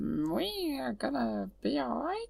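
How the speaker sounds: very high, soft, slow, swooping creature voice, we drawn out. Asked what the character sounds like, the speaker attempts a Jar Jar impression. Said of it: "What does he sound like? He sort of goes".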